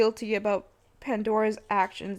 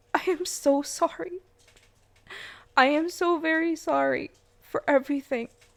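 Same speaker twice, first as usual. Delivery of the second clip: upset, emotional voice struggling for composure; 5 semitones higher than usual. Apologizing in a video to people they hurt: emotional, trying to calm down. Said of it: "I'm just getting water so I can calm down".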